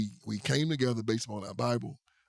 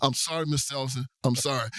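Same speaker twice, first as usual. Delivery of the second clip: put-on flustered, apologetic young man voice; 3 semitones higher, 3 dB louder than usual. Retelling how Charlie apologized after being told off, imitating Charlie's flustered apology. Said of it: "He said".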